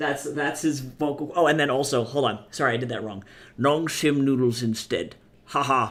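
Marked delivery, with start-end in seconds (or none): 3.6-5.9 intense delivery with hard, hissing s sounds. Reading a message aloud while doing a John Rhodes impression. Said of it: "that's my impersonation".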